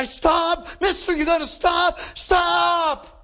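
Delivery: very high, loud pleading scream, "stop" stretched. Retelling a story, voicing a guy banging on a car windshield: retelling a screamed plea. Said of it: "He's just screaming".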